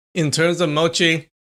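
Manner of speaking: plain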